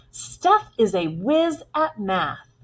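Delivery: excited, sing-song reading voice. Reading a sentence ending in an exclamation point during a lesson: a little excitement. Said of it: "read that with a little excitement".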